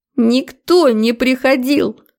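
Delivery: high, hysterical, frantic outburst. Narrator reading Svetka, struggling to break free, answering an angry question: hysterical screaming. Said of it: "Истерично завопила Светка".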